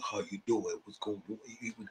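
very quiet, low, deep country drawl. Retelling how Ryan would greet people, imitating Ryan's deep country voice. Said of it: "He had the deep voice".

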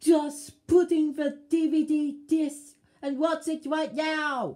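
very loud, high-pitched yelled shout. An unseen voice speaks to someone holding a new DVD, shouting. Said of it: "You don't need to shout at me".

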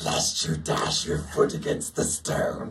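devil-like voice. Recalling a Bible scene line he was asked to voice, in a devil voice as Satan. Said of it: "in my devil voice to say".

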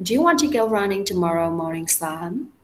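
rising tone on the final word "Sam". Intonation lesson, repeating a question: rising pitch on final sam. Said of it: "Lên giọng luôn".

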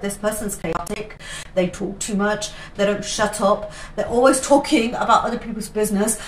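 ordinary delivery

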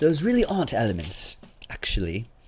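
soft, stuck-up, snooty put-on British accent. Opening cards on a break, repeating what he's saying in a snooty British voice. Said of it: "in probably a snooty British voice".

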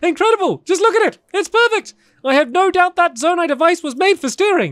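thrilled, very high, excited shouting. Researcher marvels at a prototype vehicle the player touched, shouting excitedly. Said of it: "so sorry for shouting".

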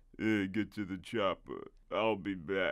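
very low, slow, garbled, mangled mumble. Imagining the other star saying famous one-liners: garbled Sylvester Stallone impression. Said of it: "Sylvester Stallone garbling out such phrases as".

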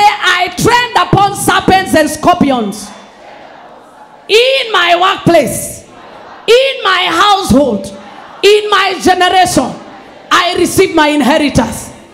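bold proclaiming voice. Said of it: "Raise your voice and say".

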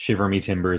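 ordinary talk, nothing marked

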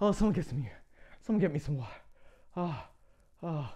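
put-on faint voice, as if about to pass out. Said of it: "I'm gonna pass out".

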